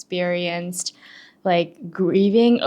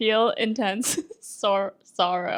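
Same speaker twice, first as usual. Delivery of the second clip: talking through laughter, quieter; 2 semitones higher, 4 dB quieter than usual. Reading a definition aloud to another speaker, laughing while talking. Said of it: "why are you laughing over the word".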